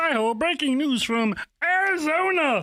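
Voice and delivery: high, goofy, silly cartoon frog puppet voice. A speaker, teased by the others, opens the breaking news: Kermit the Frog voice. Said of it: "talking like Ker- Kermit the Frog".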